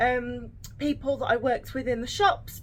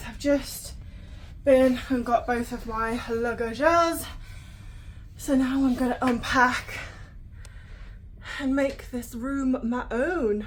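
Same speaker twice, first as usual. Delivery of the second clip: winded, out of breath. Someone who has just fetched both of their bags speaks, out of breath. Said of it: "I am out of breath".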